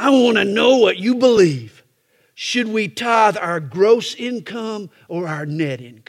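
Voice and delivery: mock talking through clenched teeth. Retelling a man's question from the floor after his opening remarks, imitating talking through clenched teeth. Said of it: "Through clenched teeth".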